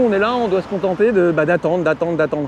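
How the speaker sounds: ordinary delivery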